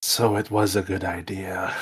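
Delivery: hushed, whispered voice. Speaking in character to the others after they pass a wall: whispering. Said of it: "I whisper to the others".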